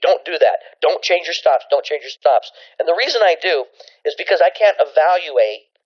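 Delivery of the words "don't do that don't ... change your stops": ordinary talk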